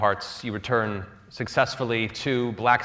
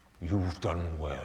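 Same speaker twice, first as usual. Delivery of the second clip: deep, resonant voice of a great dragon; 5 semitones lower, 9 dB quieter than usual. Voicing a dragon speaking as the hero falls unconscious: deep resonant dragon voice. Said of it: "a deep, resonant dragon voice say".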